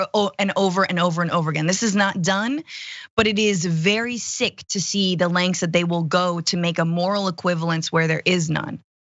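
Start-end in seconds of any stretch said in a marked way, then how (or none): 0.0-1.7 fast, rattled off over and over again.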